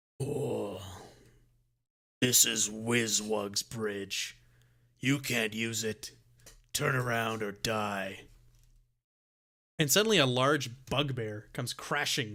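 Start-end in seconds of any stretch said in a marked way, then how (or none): 0.2-8.2 menacing, low, slow monster voice. A game master voicing an unseen creature in the trees, in a monstrous voice. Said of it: "a monstrous voice".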